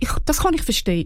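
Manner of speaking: plain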